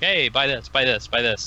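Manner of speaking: ordinary talk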